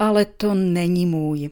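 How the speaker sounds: dejected, disappointed, let-down tone. Voicing a short line in a voice exercise: disappointed tone. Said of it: "Ale já vám v tomhle případě zklamaně oznámím".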